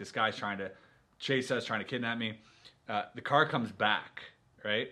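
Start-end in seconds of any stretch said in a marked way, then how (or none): none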